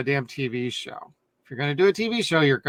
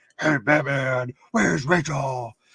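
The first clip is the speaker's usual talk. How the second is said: forced, put-on gruff masked-hero voice.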